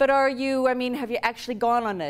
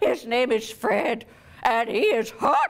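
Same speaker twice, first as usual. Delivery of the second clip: sassy, giddy, boastful put-on old-lady voice. In a comic bit, Granny answers her grandchild's questions: put-on granny voice.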